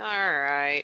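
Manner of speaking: reluctant, begrudging, unwilling tone. Repeating own earlier agreement to show how it sounded: imitating own reluctant tone. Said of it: "You can hear it in my voice. I'm like".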